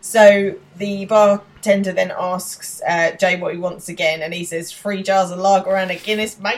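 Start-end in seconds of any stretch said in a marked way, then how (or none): 4.7-6.6 put-on Australian accent. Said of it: "slides into an Australian accent".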